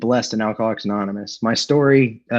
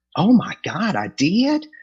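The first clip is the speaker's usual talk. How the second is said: put-on slight Southern accent, slow, drawn out, swooping; 9 semitones higher than usual. Quoting a man shown the letter he once wrote, in a slight Southern accent. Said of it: "he's got this this little Southern accent".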